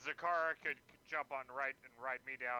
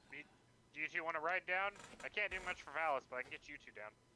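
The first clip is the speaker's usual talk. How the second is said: put-on talking bird voice; 3 semitones higher than usual. Voicing the hovering bird as it speaks to two small creatures: Galgrim's bird voice. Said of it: "what does Galgrim's bird voice say?".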